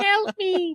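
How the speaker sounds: put-on very high small-girl voice. Describing a video without dialogue, imitating a little russian girl. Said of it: "some little Russian girl".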